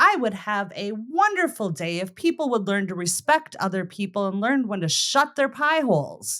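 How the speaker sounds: normal talking voice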